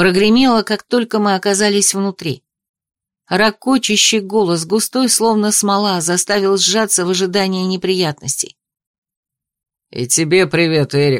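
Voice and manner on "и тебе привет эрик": low, sardonic, jeering, mocking tone. Einar replies to Erik's greeting, mocking. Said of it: "насмешливо откликнулся Эйнар".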